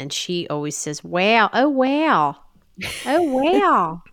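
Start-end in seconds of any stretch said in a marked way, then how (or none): 1.0-3.9 put-on very slow, broad Philadelphia accent, wow drawn out. Imitating a best friend's aunt: imitating thick Philly accent. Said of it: "has a thick Philly accent".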